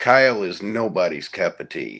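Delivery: put-on deadpan, dry and unhurried delivery. Retelling a friend's remark on an overnight show: imitating a deadpan remark. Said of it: "he matter of factly just deadpanned".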